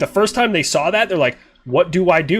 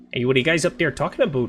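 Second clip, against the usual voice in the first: fast put-on Canadian accent, slipping a bit Irish; 4 dB quieter than usual. Asked to do a Canada accent, the speaker tries a put-on Canadian accent. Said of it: "do Canada accent".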